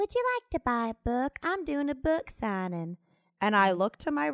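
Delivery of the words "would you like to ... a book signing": tiny, soft, ghostly little voice. Retelling walking into a restaurant where a woman offers a book: small ghostly voice. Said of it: "I hear this little voice go".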